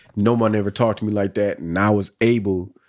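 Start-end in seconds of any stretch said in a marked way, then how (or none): none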